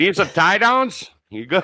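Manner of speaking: upper Midwest accent. Showing how a Wisconsin tow-truck guy is supposed to sound: Wisconsin accent. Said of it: "You're supposed to sound like this here".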